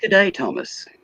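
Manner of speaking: clumsy, bad put-on Australian accent, very high-pitched. Greeting an Australian viewer during a stream, in an attempted Australian accent. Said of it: "Hicks trying to speak Aussie".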